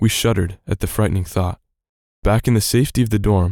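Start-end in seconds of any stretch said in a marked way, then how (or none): none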